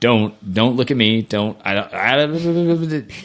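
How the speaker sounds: very slow, drawn out, fighting back tears. Retelling approaching the finish line past cheering crowds: holding back tears. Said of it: "I'm gonna cry".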